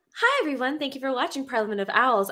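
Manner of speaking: polite call-centre customer-service voice. Asked for it, speaker signs off the show in a customer service voice. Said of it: "You want customer service voice? I got you".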